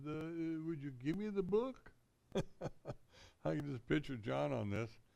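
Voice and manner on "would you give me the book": unsure, timid, hesitant, pitched-up tone. Retelling a biblical scene, acting out a request, mock-timid and unconfident. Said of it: "I don't think he said it with a whole lot of confidence".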